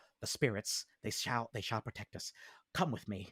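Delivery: soft, breathy whisper under the breath. The storyteller voices a man who whispers and leads the listener on: whispering. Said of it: "and as he whispers, he says".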